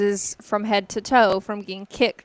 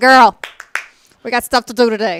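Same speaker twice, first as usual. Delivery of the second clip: put-on loud New York accent coming out; 8 dB louder than usual. A mother retelling how she now wakes her little girl, New York accent. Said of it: "your New York voice comes out".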